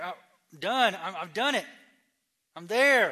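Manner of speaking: acted giddy excitement. A speaker retelling the young man's reaction before Jesus, imitating giddy excitement. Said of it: "So this man is giddy. He's like".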